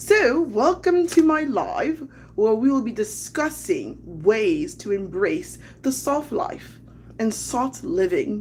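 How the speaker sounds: put-on British London accent. Opening a live stream about soft living, in a put-on London voice. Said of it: "hopefully I don't sound like Missus Doubtfire".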